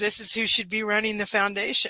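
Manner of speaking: ordinary talk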